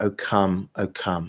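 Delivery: soft, slow half-whisper on the out-breath. Leading a breath prayer, breathing out the words: half-whispering. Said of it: "just whispering".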